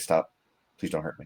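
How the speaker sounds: very quiet, soft, pleading voice.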